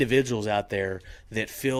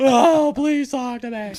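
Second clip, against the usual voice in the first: fake sobbing, higher and louder; 9 dB louder than usual. Acting out a man who misses the woman he left: mock crying. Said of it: "you start crying like".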